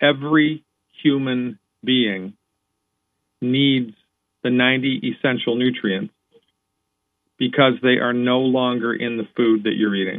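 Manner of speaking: slow, measured, deliberate emphasis on every word. Repeating a point for the audience, said slowly and deliberately. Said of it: "let me say this slowly".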